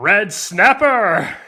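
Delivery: booming, loud, swooping American dub-announcer voice. Revealing the secret ingredient after being urged to do the voice: American dub voice. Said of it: "It's an American dub voice".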